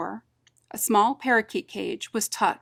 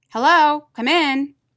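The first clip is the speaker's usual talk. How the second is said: rough, gruff call, raised and pitched up; 7 semitones higher, 8 dB louder than usual. Narrator reads someone calling a welcome from the back of the shop, gruff voice. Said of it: "a gruff voice called from the back of the shop".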